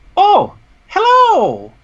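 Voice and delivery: squeaky, very high, swooping little gnome voice. Voicing a little gnome in a hanging cage greeting the players: voicing a little gnome. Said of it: "he looks at you and goes".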